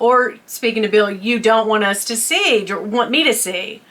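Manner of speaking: ordinary delivery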